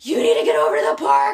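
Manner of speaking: mock frantic, high, loud, freaked-out urgency. Retelling a phone call after her dog got bitten at the park, acting out freaking out. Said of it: "Like freaking out".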